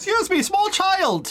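loud yelling. In character in a game, calling out to a child down the street: shouting at a child. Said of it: "I am shouting at that child".

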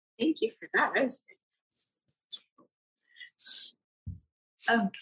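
tearful, about to cry. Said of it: "now I'm gonna cry".

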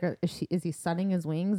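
ordinary talk, nothing marked

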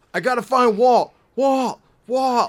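shrill, booming, very high and loud calling, over and over. Mocking a show character who keeps calling for his son: imitating Michael from Lost. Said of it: "the rest of the show is".

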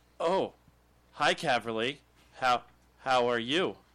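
funny, loud, very slow possessed-ghost voice. Retelling fooling his five-year-old daughter that a ghost possessed him, talking really funny as a ghost. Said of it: "I started talking really funny".

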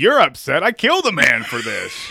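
put-on shouting. A speaker re-enacts what they would shout at the audience, retelling a yell. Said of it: "I would be yelling at the audience".

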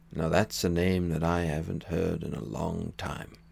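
rough, rasping, creaky character voice. Quoting Obi-Wan's line after being asked to say it: imitating Obi-Wan Kenobi. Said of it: "That was pretty good".

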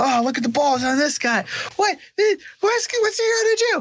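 very high, rowdy, jeering crowd catcalls. A narrator voices a crowd reacting to the listener's character, rowdy catcalling crowd voice. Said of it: "eruption of applause and catcalls".

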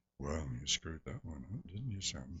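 very soft, hushed murmur under the breath. Retelling an actor's remark after a blown first scene: quietly imitating Michael Caine. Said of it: "very, very quietly said".

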